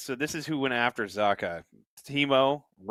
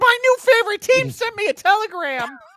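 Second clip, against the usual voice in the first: very loud, very high, shrill, booming voice; 9 dB louder than usual. Imitating a Mets fan who got a telegram: imitating Sam Wu's voice. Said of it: "he's doing that voice".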